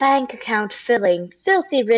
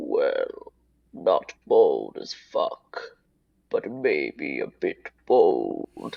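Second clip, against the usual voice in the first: very low, very slow, deep resounding voice; 5 dB quieter than usual. A narrator voices a magical wall that grants wishes, deep wall voice. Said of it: "A deep voice resounds from within the wall and says".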